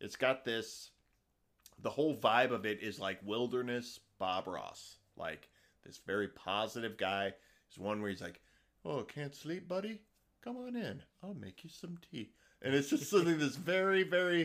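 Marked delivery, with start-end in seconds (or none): 8.9-12.3 gentle, soft, high, very soothing voice. Imitating a popular TikTok guy who takes you fishing, imitating a soothing voice. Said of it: "just this very soothing voice".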